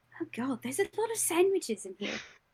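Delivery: barely-there, very quiet, hushed voice. Voicing a character finding sandwiches in a fridge: very quiet voice. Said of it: "very quietly".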